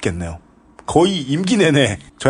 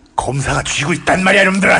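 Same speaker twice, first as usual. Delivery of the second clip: strong, forceful, hard-hitting, punchy, pitched up; 6 semitones higher, 3 dB louder than usual. Urging someone to deliver a line with more force next time: forceful delivery. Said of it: "다음번에는 좀 세게. ... 이렇게".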